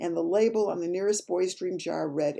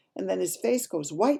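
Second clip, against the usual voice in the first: plain reading voice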